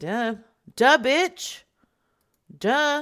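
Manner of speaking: loud, very slow, dragged-out drawl. Quote what Dragonmere said back to you, as a Dragonmere impression. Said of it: "Sounds just like him, doesn't it?".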